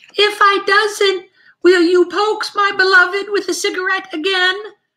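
very high, thin, wavering, wobbly voice. Asked by Charn to say hello to the visitors, Hutch answers: thin, wavering voice. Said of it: "Said Hutch in a thin, wavering voice".

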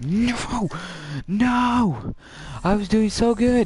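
anguished outcry.

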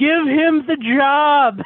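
shrill, very high yell with "job" drawn out. Telling a story where she grabs the phone mid-interview: retelling her yell. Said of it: "she grabs the phone from him and yells".

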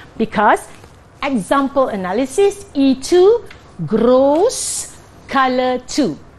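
very slow, clear delivery, each word laid out. Explaining a color-coding scheme to Sean, speaking very slow and clear. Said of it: "I'm saying this very slow and clear".

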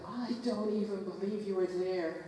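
normal talking voice

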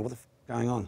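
ordinary talk

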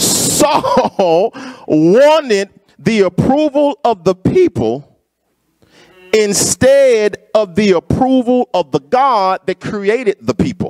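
slow, measured, deliberate word-by-word emphasis. Repeating a line to Brother Clement, saying it slower this time. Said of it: "say it just a little bit slower".

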